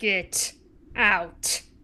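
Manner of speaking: cold, icy aristocratic voice, hushed to a near-whisper. Glaring at a man questioning everyone and answering in character, icy noble voice. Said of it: "in like my iciest noble voice".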